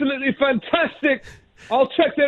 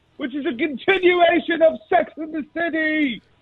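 shouting. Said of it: "I love when you just yell at us".

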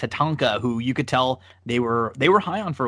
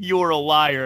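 put-on screaming, higher pitch; 4 semitones higher than usual. Retelling how Gorilla kept answering Bobby: imitating Gorilla screaming. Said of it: "he just screams at him".

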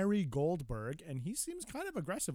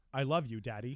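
put-on firm adult tone; 3 semitones lower than usual. A father quoting his young child, imitating a firm adult tone. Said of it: "a very firm, kind of an adult tone".

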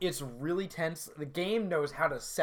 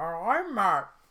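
mouth full, higher and louder; 5 semitones higher, 6 dB louder than usual. Opening the podcast, matt says his name through peanut butter m&ms, talking with mouth full. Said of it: "Matt has a mouthful of peanut butter M&Ms".

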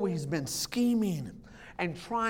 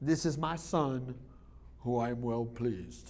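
very low, deep, god-like voice dropped to the floor; 8 semitones lower, 6 dB quieter than usual. Retelling a Bible story, God speaking from heaven: Mufasa voice. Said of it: "God in the Mufasa voice is like, Jim, James Earl Jones".

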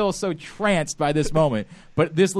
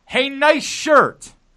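mock, high, called-out hollered shout; 8 semitones higher than usual. Retelling how a man shouted at the group: imitating a man shouting. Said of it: "we hear a man shout out".

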